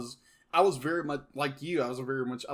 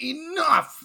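play-acted, very high, loud frustrated outburst; 7 dB louder than usual. Acting out Elsa exploding when she throws the ice wall up: imitating Elsa's frustrated outburst. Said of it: "it was her frustration of it".

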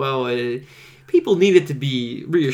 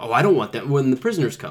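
plain

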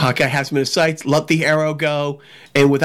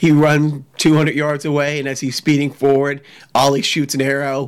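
plain

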